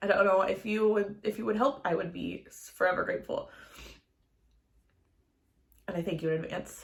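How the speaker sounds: tearful voice, crying while speaking. Asking the audience for help with the blog, crying while speaking. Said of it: "I apologize for crying".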